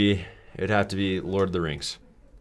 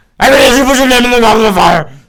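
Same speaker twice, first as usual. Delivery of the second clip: put-on old wizard impression, higher and louder; 16 dB louder than usual. Friends trade Harry Potter quotes; the speaker does the goblet line as a Dumbledore impression.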